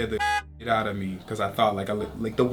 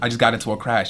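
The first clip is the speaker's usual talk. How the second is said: normal talking voice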